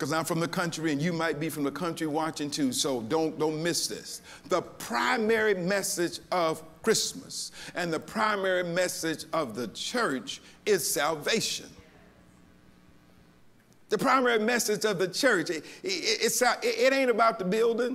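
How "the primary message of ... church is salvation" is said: slow, deliberate, careful emphasis on each word. Repeating the main point for viewers watching so they don't miss it, said slowly. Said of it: "let me say it slow".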